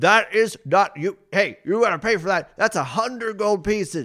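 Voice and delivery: very high, loud, yelled-out delivery. Voicing a Duergar demanding payment for a scroll: yelling out. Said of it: "the Duergar yell out".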